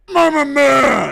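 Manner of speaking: shrill, high, raspy wrestling-promo shout. Speaker acts out an imagined ring promo reply, as a Kayla Harrison impression. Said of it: "Kayla says back".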